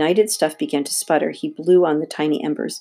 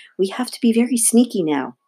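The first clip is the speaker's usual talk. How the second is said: whispered, much higher pitch; 6 semitones higher than usual. A character lowers his voice after hollering at the dogs, whispered. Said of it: "he whispered".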